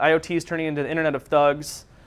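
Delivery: ordinary talk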